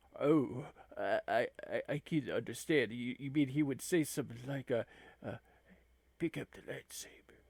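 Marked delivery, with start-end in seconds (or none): 6.2-7.2 half-whispered, breathy, whispered delivery. Retelling what Frater told the disarmed man, in a Jack Palance impression. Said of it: "I'm not very good at, uh, impressions like that".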